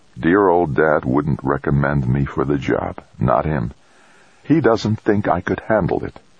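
ordinary delivery, nothing marked

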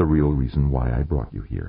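ordinary delivery

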